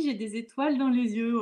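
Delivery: normal talking voice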